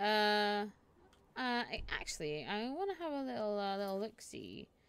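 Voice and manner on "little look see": usual speaking voice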